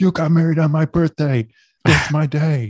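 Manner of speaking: high, very loud yelling shout. Imitating Dan, who can still hear the call: imitating Dan shouting. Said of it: "He's shouting".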